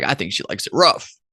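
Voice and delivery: ordinary talk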